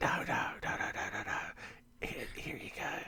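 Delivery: soft, hushed whisper.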